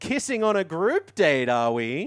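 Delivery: loud, pointed tone. Retelling what he said when Crystal went in for a kiss, retelling a loud remark. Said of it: "he loudly says".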